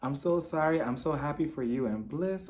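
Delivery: mock weeping, tearful crying through the words. Retelling a contestant's apology to Zach: imitating someone crying. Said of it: "continue crying, continue crying".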